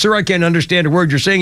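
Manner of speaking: ordinary talk, nothing marked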